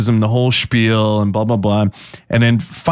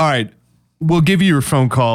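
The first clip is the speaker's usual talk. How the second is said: ordinary delivery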